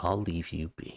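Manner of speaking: close, hushed, soft half-whisper. Voicing a familiar voice that half-whispers into one player's ear: half-whispering voice in your ear. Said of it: "you hear a little whisper in your ear".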